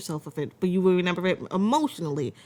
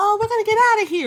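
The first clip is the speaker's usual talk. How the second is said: put-on very high, raised little-kid childlike voice; 6 dB louder than usual. Showing how a cute creature would be expected to sound: childlike voice. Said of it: "you expect this childlike voice to be".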